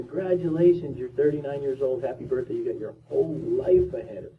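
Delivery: ordinary delivery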